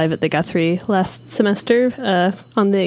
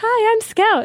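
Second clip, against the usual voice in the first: very high, put-on small girlish voice. Joking that the film's lead actor played every role, high-pitched voice as Scout. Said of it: "putting on a high-pitched voice".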